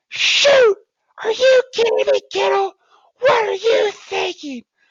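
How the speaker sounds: very high, shrill, screechy shouting. Describing a man whose voice rose when he screamed, the speaker imitates a high-pitched scream. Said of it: "his voice would just go high pitched".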